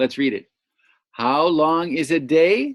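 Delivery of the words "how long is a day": pitch rises on the word day. Reading a question aloud to show intonation: rising pitch on day. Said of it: "Do you hear how I went up at the end?".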